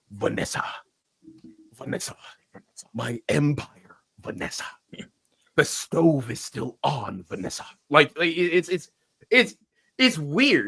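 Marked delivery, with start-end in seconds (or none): 0.1-7.6 angry, breathy, fierce whisper projected to carry. Imitating an actor's voice as Fisk: imitating Fisk's angry whisper. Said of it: "he sounds like he's very angry, but trying to tell you a secret from far away".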